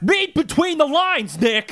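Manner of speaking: very high-pitched voice. Trying out an impression of another person for the others: Mike Russell impression. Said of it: "let me try my Mike Russell impression".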